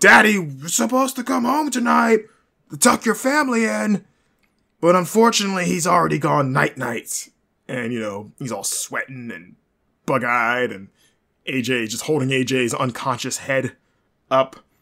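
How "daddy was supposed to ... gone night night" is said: higher, louder put-on screaming wrestler voice. Retelling a wrestler's threat on the mic: imitating Samoa Joe screaming into the mic. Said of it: "just screaming into the mic".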